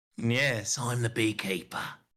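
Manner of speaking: put-on London accent. In banter between two speakers, answering with a Jason Statham impression. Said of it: "That was a great Jason Statham accent".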